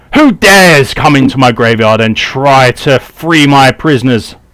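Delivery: loud screamed voice. Voicing a character who catches intruders in her graveyard: character screaming. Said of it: "she screams".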